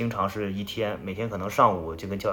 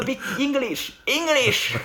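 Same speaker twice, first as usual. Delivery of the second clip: mock very high, loud yell; 5 dB louder than usual. Retelling how an American in the room lost patience: imitating someone shouting. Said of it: "在里面就开始大喊".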